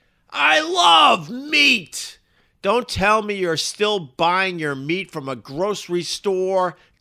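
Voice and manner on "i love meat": excited shout, high, slow and loud. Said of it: "You can hear the excitement in my voice".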